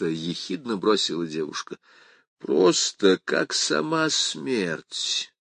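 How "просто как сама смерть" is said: lazy, high, drawn-out drawl. A man answers a young woman's sarcastic remark, drawled. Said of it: "протянул закат".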